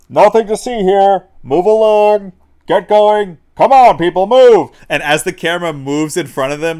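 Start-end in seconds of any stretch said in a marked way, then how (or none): 0.2-4.7 very loud, pitched-up megaphone-style shout. Retelling a film scene, imitating a cop on a megaphone. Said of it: "a cop on a, like, megaphone going".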